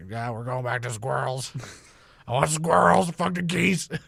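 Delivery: put-on irritated, griping Southern good-old-boy accent. Repeating the impression of the director's decision: Tim Burton as angry Southern dude. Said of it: "just a angry Southern dude just like".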